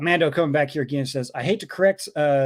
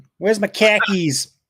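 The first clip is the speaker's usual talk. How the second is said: loud put-on Boston accent with dropped r; 4 semitones higher, 5 dB louder than usual. Delivering the punchline of a joke to the hosts in a boston accent. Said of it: "The Boston accent".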